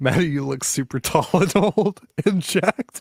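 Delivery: laughing while speaking. Reading a viewer comment aloud, laughing while reading aloud. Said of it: "I keep on laughing at the comments".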